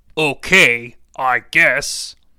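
put-on deep voice of a four-year-old child. Reading a story aloud, voicing a four-year-old boy: deep voice for a four-year-old. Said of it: "kind of a deep voice for a four-year-old".

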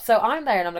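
ordinary delivery

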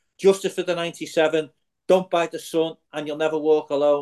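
ordinary talk

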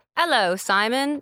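put-on English accent. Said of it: "she adopts an English accent".

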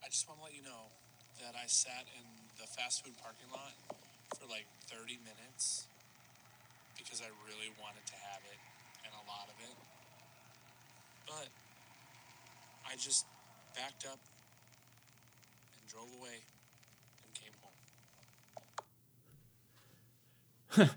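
very quiet, sad, broken-up, halting, sorrowful whisper. Speaker plays listeners a voice memo she recorded, in a sad voice. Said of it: "Can you hear like the sadness in my voice?".

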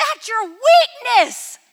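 very high, very loud boisterous cheer, acted out. Retelling asking him about the stage, the speaker quotes his answer, imitating a jubilant, boisterous man. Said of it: "jubilantly and happy, like always, this boisterous man voice".

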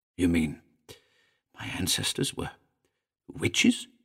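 small, soft little voice. Narrator reads Elliot asking the figure a question: small voice. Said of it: "Elliot asked in a small voice".

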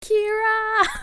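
acted-out, shrill, very loud, drawn-out panicked wail. Reenacting a scene from the last episode: reenacting a panicked cry. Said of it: "There we go".

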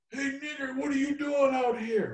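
harsh, hostile shouted call, very high and shrill. Retelling what a stranger shouted at a red light: imitating someone yelling. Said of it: "I keep hearing someone yelling".

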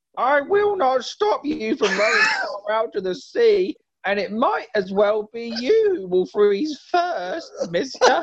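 put-on little-kid voice, pitched high. Player voicing Thor in disguise, a grown man imitating a young child. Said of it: "do it as like a grown man trying to imitate a young child".

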